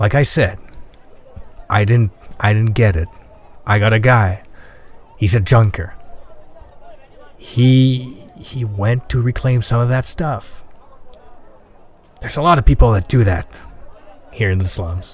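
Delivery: low, serious voice. Voicing a shopkeeper who leans in to talk: serious low tone. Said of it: "starts talking, like, this serious low tone".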